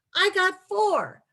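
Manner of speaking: put-on excited child voice, yelling. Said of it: "starts yelling".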